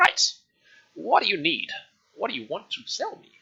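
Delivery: put-on tiny, very high, swooping old-woman voice. Narrator voicing a tiny old woman seated behind the counter, tiny old woman voice. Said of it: "and you see this tiny old woman with this huge amount of grey hair, / and you see this tiny old woman with this huge amount of grey hair, just like falling around her body. It doesn't reach the floor".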